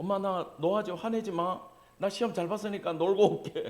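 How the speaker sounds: put-on coaxing, wheedling, pleading child voice. Acting out a child begging mom to let them go play: imitating a child pleading with mom. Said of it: "애들이 엄마한테 ... 부탁할 때 이러잖아".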